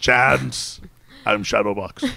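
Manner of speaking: put-on voice of an old dog. Joking about a superhero name, talking like Shadow from Homeward Bound. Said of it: "that's your voice".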